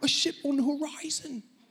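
squeaky, high-pitched put-on British accent. Narrating a story, the lookout in the crow's nest calls out in a British accent. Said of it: "I should say with a British accent".

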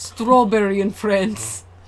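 slow, bad Russian accent. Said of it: "that's the only accent I can do".

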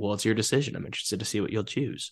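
put-on smarmy delivery. Retelling a woman's reply to a man in a scene, mock-smarmy tone. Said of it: "she says it very smart, like it's smarmy".

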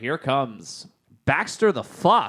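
slow, drawn-out wrestling ring announcer voice. Imagining a wrestling announcer calling out a silly wrestler's name: wrestling announcer voice. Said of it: "you have to hear the announcer saying".

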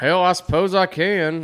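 put-on Southern drawl. Answering the film line in character: Billy Bob impression. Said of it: "I can't say anything else as him".

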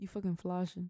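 "flashing" said very fast and clipped. Showing others how to say the slang word: saying flashing really fast. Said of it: "you have to say flashing, flashing, really fast".

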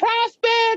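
very high-pitched, needling, teasing call. Retelling how Tom kept calling out: high-pitched Tom voice. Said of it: "this high-pitched voice every time he was like".

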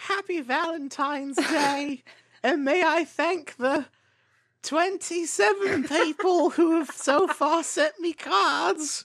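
very high, put-on squeaky character voice. Reading a quiz clue aloud to a teammate, in Dobby voice. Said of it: "would this one help if I read it in Dobby voice?".

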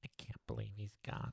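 hushed, creaky nasal voice, murmured softly. Quoting Luke's line from a trivia question, in nasal Luke voice. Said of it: "That's my nasal Luke".

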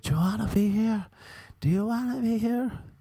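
very high, shrill screaming, words repeated. Retelling how the teacher screamed at a girl: imitating a teacher screaming. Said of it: "he started screaming at that girl".

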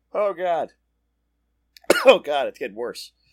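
loud, spluttering, choking coughing fit. Something went down the speaker's wrong pipe at the microphone; choking, coughing. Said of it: "went right down the wrong pipe".

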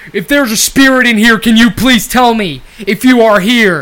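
very loud, high, slow booming call. Joking about ghosts, then playing a ghost hunter: Zach Bagans voice. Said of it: "I'll be Zach Bagans".

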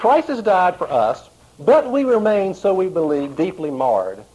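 mocking, ironic, sarcastic reading with swooping pitch. Reading a quote from a book aloud: reading a quote sarcastically. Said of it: "He's being sarcastic as I read this".

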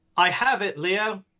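high, firm, insistent calling-out voice. In a role-play scene, the character calls out to Leo, shouting very loudly. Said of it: "I shout very loudly".

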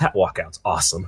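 low, chuckling, giggly mutter. Retelling a commentator's reaction to a fighter's walkout: imitating a giggling mutter. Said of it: "you hear him kinda giggle and mutter him to himself".

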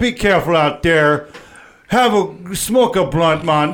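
put-on Jamaican accent. Host signing off to viewers at the end, Jamaican accent outro. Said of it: "I don't know why I did Jamaican outro".

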